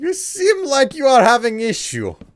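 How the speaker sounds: very high, loud, bad fake Russian accent. Voicing a game customer named Vector: terrible Russian accent. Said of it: "some sort of a terrible Russian accent".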